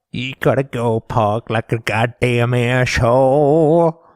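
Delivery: put-on American accent. A speaker tries out a line in a scene; put-on American accent. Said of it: "Can we just talk about my American".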